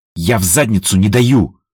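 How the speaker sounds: plain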